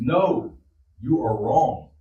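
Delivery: very slow, drawn-out scream. Acting out an imagined teacher in class: imitating a teacher screaming. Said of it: "and then the teacher screams".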